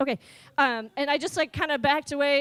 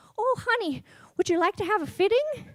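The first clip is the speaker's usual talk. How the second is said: tiny, small, high-pitched little lady voice; 7 semitones higher than usual. Retelling how a tiny lady offers a fitting: imitating a little tiny voice. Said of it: "this little tiny voice behind me is like".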